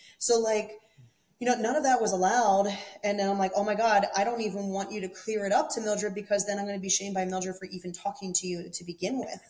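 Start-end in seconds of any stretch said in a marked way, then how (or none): none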